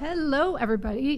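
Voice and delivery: frog-in-throat croak. Radio host opening her show, with a frog in the throat. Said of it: "what was that frog in my throat?".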